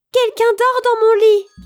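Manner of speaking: very high-pitched, loud little exclaiming cry. Narrator reads the little bear's line on finding someone asleep, crying out. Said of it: "s'écria".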